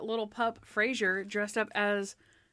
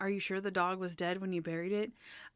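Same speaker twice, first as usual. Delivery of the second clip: put-on condescending tone, quieter; 3 semitones lower, 6 dB quieter than usual. Retelling a character's line to Natalie, imitating a condescending tone. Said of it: "just so condescending to Natalie, like".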